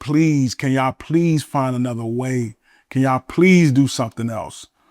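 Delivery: put-on tearful, crying, pleading voice. Retelling begging doctors to avoid a spinal tap: retelling crying plea. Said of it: "I was in that joint crying".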